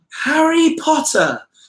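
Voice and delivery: very high, posh, fancy English accent. Reading out a viewer's request to say the name: fancy English accent. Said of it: "English fancy accent".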